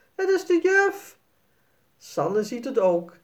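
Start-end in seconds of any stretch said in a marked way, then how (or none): 0.2-1.2 very high, stunned, astonished, surprised shout. Narrator reading a character who pulls the sheet off a ghost: very surprised shout. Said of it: "Jasper kijkt heel verbaasd en schreeuwt".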